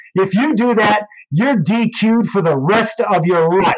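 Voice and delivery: high, furious, angry yell. Speaker recounts screaming a warning at him, retelling a scream at him. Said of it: "I screamed at him like a dad mad at the kid".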